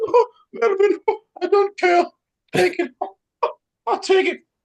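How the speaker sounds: really high voice, pitched way up. Speaker retells Paul answering Melvin during an argument, in Paul's really high voice. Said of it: "Paul has that really high voice".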